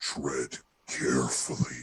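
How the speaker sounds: very deep, low, machine-altered voice. Voicing a dormant entity in the mind of Vertinor: Niadon voice through voice changer. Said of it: "it's not the voice changer".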